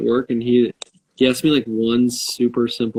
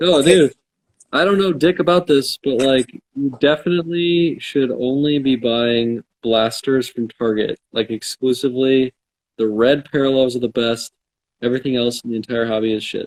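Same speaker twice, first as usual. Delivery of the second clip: ordinary talk, nothing marked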